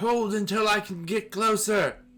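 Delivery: high, slow yelling. Narrating to the players, Mother Illustra in the doorway: Mother Illustra yelling. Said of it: "Like yelling through the crows".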